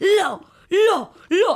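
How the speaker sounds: very high, shrill, screeching prehistoric-bird shriek. Retelling how a woman kept pointing at you, imitating her pterodactyl scream. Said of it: "she's doing that pterodactyl scream".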